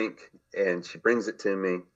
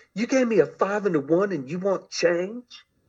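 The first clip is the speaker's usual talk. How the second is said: mock very high, shrill scream; 11 semitones higher than usual. Retelling a bartender's reply when asked for change: imitating someone screaming. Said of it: "she screams at me".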